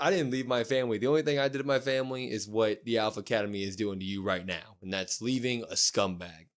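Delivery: ordinary talk, nothing marked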